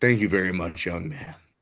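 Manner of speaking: dropped, deep, low man's speaking voice. Retelling what a man he recognized from House of Cards said, imitating a man's deep voice. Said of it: "in his deep voice".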